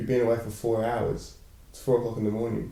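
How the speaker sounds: ordinary talk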